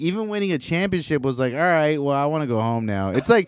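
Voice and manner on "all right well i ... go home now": put-on nonchalant, unbothered voice, pitched higher. Retelling a player's reaction to winning a championship: imitating Nikola Jokic, nonchalant. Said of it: "he's nonchalant about everything".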